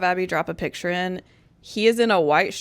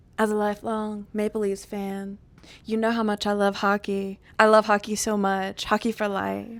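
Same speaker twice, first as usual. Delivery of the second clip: put-on dramatic concert-intro announcer voice; 3 dB quieter than usual. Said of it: "doing an intro to a concert".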